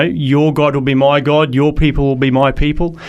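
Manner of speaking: plain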